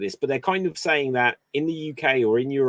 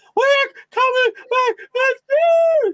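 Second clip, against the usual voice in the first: shrill, loud, high, drawn-out dolphin screech; 7 dB louder than usual. Retelling an announcement at a wrestling show: Tony Khan in weird screechy dolphin voice. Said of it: "in this weird screechy dolphin voice".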